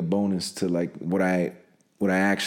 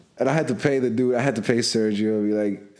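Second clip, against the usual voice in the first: ordinary talk, nothing marked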